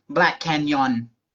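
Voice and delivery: attempted put-on Thai accent. Retelling what they said to a lady, trying a Thai accent. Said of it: "we're gonna try it with a Thai accent".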